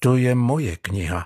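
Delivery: quiet, firm, resolute voice. Žán stands up to Mario, who has stepped on his book, quiet but firm. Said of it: "prohlásil tichým, ale pevným hlasem".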